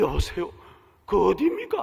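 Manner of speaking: put-on startled, alarmed old woman's voice, caught off guard. Speaker retells a 3 a.m. phone call, voicing the startled grandmother answering. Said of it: "놀란 할머니의 목소리가 들립니다".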